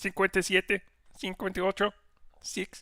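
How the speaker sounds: very high-pitched puppet voice, speaking Spanish. Counting in Spanish on request: Spanish Kermit voice. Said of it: "Spanish Kermit".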